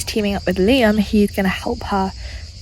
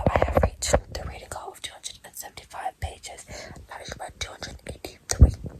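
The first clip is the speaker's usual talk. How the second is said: hushed, quiet voice, quieter still. Updating viewers at night while others sleep nearby: speaking quietly. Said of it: "I'm being quiet because everyone else is asleep".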